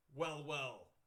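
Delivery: loud, snarling thug voice. Game master voicing a thug confronting the party, snarling. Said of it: "he snarls".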